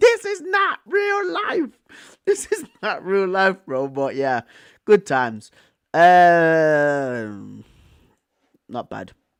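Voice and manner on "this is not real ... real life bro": very high, stretched-out, drawn-out yelling. Speaker recalls screaming at the tv screen during a match; retelling own shouting.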